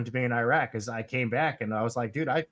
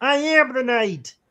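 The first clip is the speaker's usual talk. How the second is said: very high, raised frog-puppet voice; 13 semitones higher, 8 dB louder than usual. Joking about casting for Batman, doing Kermit the Frog as Batman. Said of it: "And Kermit the Frog as Batman".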